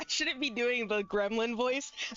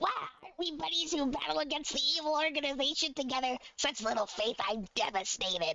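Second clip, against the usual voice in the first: put-on small gremlin creature voice; 2 semitones higher than usual. Showing the voice planned for the character Salsa: gremlin voice. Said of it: "that's what I was gonna make her voice".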